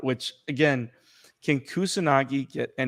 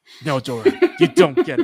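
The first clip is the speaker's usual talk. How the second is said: dead-serious, very high and loud; 14 semitones higher, 7 dB louder than usual. Retelling how Kusanagi says it: imitating Kusanagi's seriousness. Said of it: "this seriousness".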